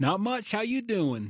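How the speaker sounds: easygoing American Southern accent. Greeting the podcast host after being welcomed: Southern accent. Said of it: "there's that Southern accent again".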